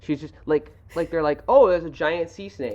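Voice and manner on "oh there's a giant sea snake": loud, sarcastic mock despair. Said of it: "such a sarcastic response from Sandy".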